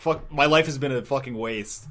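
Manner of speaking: plain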